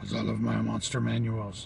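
low-pitched, soft, raspy voice. Talking about loving to buy monster manuals, in a Cookie Monster voice. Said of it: "That's my Cookie Monster voice".

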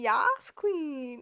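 mock exaggerated camp voice. Playfully poking fun at a habitual reaction word the speaker picks up, to a casual listener. Mocking a campy stereotype. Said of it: "sometimes I like to make fun of it".

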